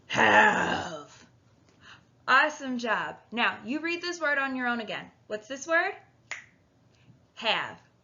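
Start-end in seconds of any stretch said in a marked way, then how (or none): 0.1-1.2 put-on monster voice, louder. Reading a sight word aloud together with learners, in a monster voice. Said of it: "in your monster voice".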